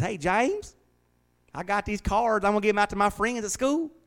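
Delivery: put-on very high, folksy little country-kid voice. Speaker quotes a six-year-old boy from his church, imitating Tay. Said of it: "he talks like a little country bumpkin".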